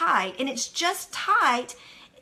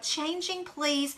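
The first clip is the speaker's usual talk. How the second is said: put-on nice, sugary, soft, sweet gentle voice; 7 dB quieter than usual. Retelling how the trainer announces circuit changes: imitating a nice sweet voice. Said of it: "in such a nice voice".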